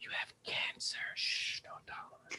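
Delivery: hushed near whisper. Retelling how people once spoke about cancer: imitating a near whisper. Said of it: "you had to almost whisper it".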